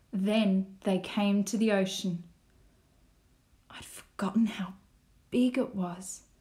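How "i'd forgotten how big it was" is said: hushed whisper under the breath. Narrator reads Mum's line as the family reaches the ocean, whispered. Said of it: "whispered Mum".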